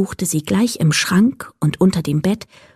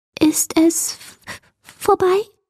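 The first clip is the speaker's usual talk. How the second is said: very high, small, quavering, trembling voice; 9 semitones higher than usual. A narrator reads a voice from inside the wardrobe, asking in a trembling voice. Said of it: "fragte eine zitternde Stimme".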